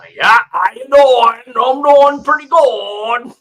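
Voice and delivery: put-on very loud Maine accent, good stretched. Imitating how someone from Maine talks: imitating a Maine accent. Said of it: "you have a Maine and open up the mouth. It's like".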